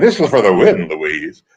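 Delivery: as deep as the voice goes. Retelling an audition line for the show, imitating own deepest voice. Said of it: "using my deepest voice".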